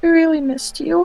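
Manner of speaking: put-on very high, very quiet, teary and sniffling. Player giving their character's reply while gripping tight and sniffling, very quiet, sniffling. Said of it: "I just very quietly say".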